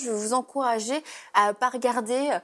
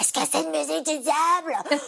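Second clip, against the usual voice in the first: loud, high-pitched stage whisper; 5 semitones higher than usual. Retelling what someone asked, re-enacting a very loud whisper. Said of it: "en chuchotant hyper fort".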